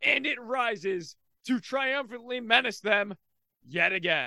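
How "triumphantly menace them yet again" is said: normal talking voice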